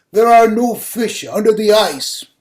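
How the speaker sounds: thundering, very loud, booming heavenly voice. Telling a story, a voice from above speaks to a woman ice fishing, bellowing voice from above. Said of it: "a voice from above bellows".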